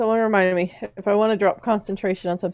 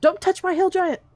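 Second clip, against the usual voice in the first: very high, shrill scream; 11 semitones higher than usual. Screaming at the archers on the wall in character: screaming at the archers. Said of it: "I'm gonna scream at 'em".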